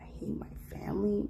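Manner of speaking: mocking whisper.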